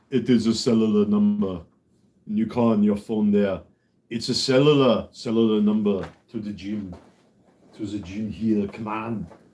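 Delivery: put-on Austrian accent. Struggling to say cellular, speaker does an Arnold Schwarzenegger accent. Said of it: "It's like Arnold Schwarzenegger trying to s- say the word cellular".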